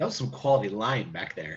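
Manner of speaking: quiet, muttered aside under the breath. Speaking in character to a companion out of earshot, said under the breath. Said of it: "I say under my breath".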